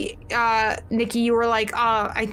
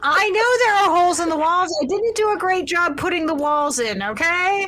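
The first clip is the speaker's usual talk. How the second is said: annoyed, pitched-up, angry defensive tone; 7 semitones higher, 4 dB louder than usual. In a roleplay, a player answers another character calling out to her: angry, defensive. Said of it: "why do you sound angry about the walls?".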